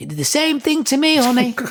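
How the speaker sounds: put-on high-pitched, shouted, in American accent. Retelling what a woman passing the ward called out, imitating a shout in american accent. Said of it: "she shouted, you know, in American accent".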